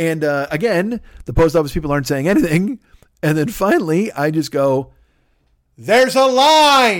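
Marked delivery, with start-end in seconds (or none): 5.8-7.0 shrill, very high yell, drawn out. Telling how they finally spoke up at the post office: yelled loudly. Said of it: "That loud, like yelled it".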